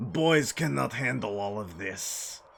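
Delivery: goofy, put-on Eastern European accent. Retelling a joke character from a drive with a coworker: put-on Eastern European accent. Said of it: "an Eastern European accent".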